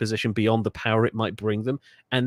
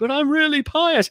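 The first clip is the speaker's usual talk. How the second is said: put-on loud, very high elderly man voice; 5 dB louder than usual. Joking about a papal contest, voicing the candidate: put-on ninety-year-old man voice. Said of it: "a ninety-year-old man like".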